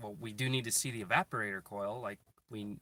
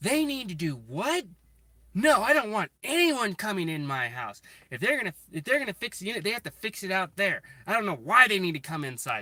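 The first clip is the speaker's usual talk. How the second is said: shrill, very loud, high screaming, swooping wildly; 9 semitones higher, 9 dB louder than usual. Retelling how a woman screamed at a man, acting out her words: retelling a woman's screaming. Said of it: "She was screaming at the top of her top of her lungs".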